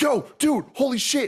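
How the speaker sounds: very excited, frantic, freaking out.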